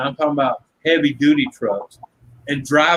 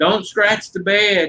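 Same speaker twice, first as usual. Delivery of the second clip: put-on scream, pitched up and drawn out; 6 semitones higher than usual. Retelling how a truck owner screamed at two store workers loading it: imitating someone screaming. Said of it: "he's screaming at the two guys".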